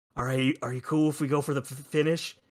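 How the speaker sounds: voiced, half-whispered, confidential stage whisper. Breaking kayfabe, speaker retells talking to him off the mic: retelling a half-whisper. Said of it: "I'm whispering him".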